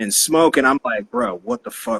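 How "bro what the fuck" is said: put-on panic, higher and quieter. Retelling a strange encounter at a house: imitating own panic. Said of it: "I freak out for a minute".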